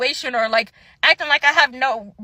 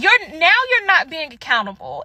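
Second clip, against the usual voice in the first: acted angry voice, sounding mad; 2 semitones higher than usual. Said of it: "And now I'm actually getting mad".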